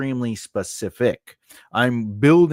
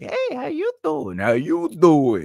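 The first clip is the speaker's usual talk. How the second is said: put-on endearing creepy voice, higher pitch; 4 semitones higher than usual. Describing a nice kind of creepy guy: Joey from Friends creepy voice. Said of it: "like Joey from Friends is creepy".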